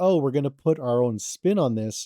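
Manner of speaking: ordinary talk, nothing marked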